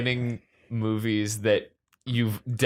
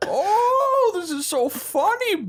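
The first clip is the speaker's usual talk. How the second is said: put-on villain voice, smiling, higher pitch. Trying out a Bane voice that smiles the whole time. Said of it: "He's smiling the whole time".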